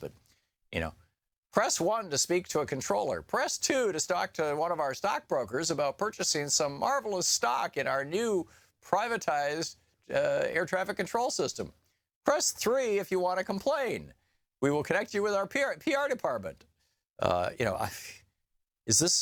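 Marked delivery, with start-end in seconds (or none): 1.5-16.6 pitched-up recorded female automated phone menu voice. Mocking a privatized air traffic phone menu: imitating automated phone-menu lady. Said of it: "the lady's voice who sounds like".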